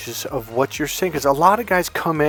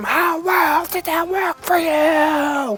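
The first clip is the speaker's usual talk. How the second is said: acted, very high, very slow, stretched-out scream; 14 semitones higher than usual. Retelling an argument with a client, imitating own screaming. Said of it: "And then I scream".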